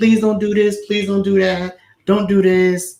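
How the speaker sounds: earnest, begging, pleading voice. Retelling how a movie heroine pleads in the next film: imitating pleading. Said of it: "she's pleading".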